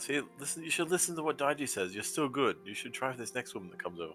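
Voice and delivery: hushed whisper. Voicing a character who whispers advice to a companion: whispering. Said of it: "just whisper into Americana".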